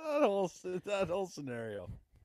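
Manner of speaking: talking through laughter. Answering why they are laughing, laughing while talking. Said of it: "what are you laughing about?".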